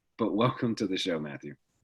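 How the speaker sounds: raspy, hoarse voice, rasp deliberately leaned into. A host just over the flu welcomes his guest to the show, raspy voice. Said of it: "my voice is more raspy".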